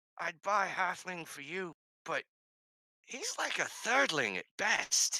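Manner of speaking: theatrical, high, swooping stage whisper. A character leans over to a companion to size someone up, in a stage whisper. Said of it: "Stage whisper style".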